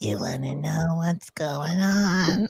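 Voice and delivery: very slow, creepy, sinister, drawn-out put-on voice. Retelling how Tony came in and put a voice on: imitating Tony's creepy voice. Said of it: "put that voice on".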